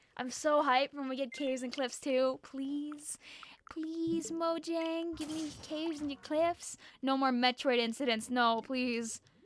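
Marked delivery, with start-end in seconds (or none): 2.5-9.2 playful mock begging. Begging the game developers for a faster update: mock begging. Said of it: "I'm begging".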